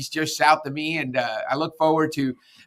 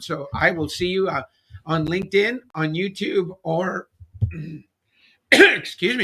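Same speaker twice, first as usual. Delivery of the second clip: choked-up voice catching with emotion; 4 semitones higher than usual. Host signing off after a great interview with Carl, choked up voice. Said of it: "I'm losing my voice".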